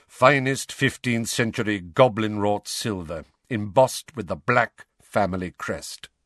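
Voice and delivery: plain reading voice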